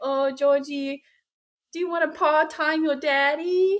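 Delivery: put-on silly, high, cutesy kid-like little voice. Speaker shows how she and her boyfriend talk to their pet, little pet voice. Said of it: "we have like a little voice".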